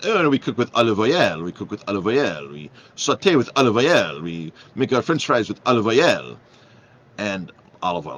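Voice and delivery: put-on French accent. Retelling an exchange about soy oil, the speaker quotes the waiter in a French accent. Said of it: "the waiter goes in this French accent".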